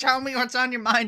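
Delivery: high, mocking, laughing echo.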